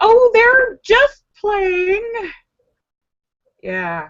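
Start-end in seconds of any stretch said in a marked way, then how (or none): 0.0-2.3 high, very slow, breezy, dismissive, drawn-out voice. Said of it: "her mom's like".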